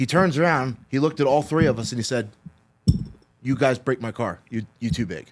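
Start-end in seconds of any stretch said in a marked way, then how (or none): none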